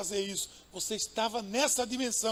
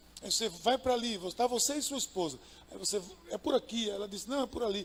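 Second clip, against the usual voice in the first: normal talking voice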